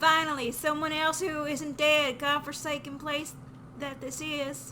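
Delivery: poor put-on Texas accent, loud and high. Asked to try a weird accent, the speaker voices a line in a bad texan accent. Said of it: "That's a that's a bad Texan accent".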